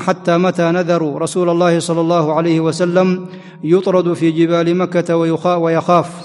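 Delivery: ordinary talk, nothing marked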